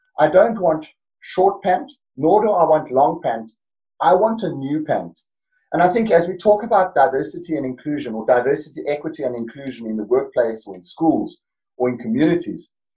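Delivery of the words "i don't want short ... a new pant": put-on Afrikaans-accented speech. Retelling what a man at the back of the room said, in a thick Afrikaans accent. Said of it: "in a lovely, thick Afrikaans accent".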